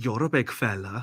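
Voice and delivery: put-on Welsh accent. Retelling a bar story, the speaker quotes a very tall Welsh miner in a Welsh accent. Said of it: "and I apologise for the accent".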